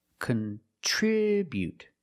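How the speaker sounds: contribute with stress on second syllable, -tri-. Pronunciation lesson on the verb contribute: stress on second syllable of contribute. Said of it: "We put the stress on the second syllable".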